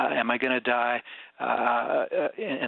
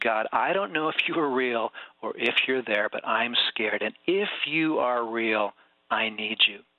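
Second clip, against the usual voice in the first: mock whispering. Retelling a wounded man's first prayer to a chaplain: retelling a whisper. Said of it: "and he whispers".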